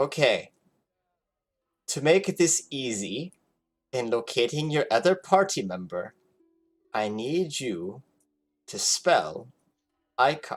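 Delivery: goblin wizard character voice. Voicing a goblin wizard speaking in a player's head; Kak goblin wizard voice. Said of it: "the familiar voice of the goblin wizard".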